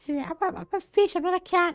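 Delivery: very high-pitched fish character voice. Playing as the avatar Saba and acting like Saba, in a high-pitched Saba voice. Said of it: "High pitched voice".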